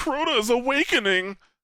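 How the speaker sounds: very high, sneering, mocking parody voice. Mocking a game character's annoying, over-dramatic voiceover: imitating Eris Morn's voice. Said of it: "I fucking hated her voice".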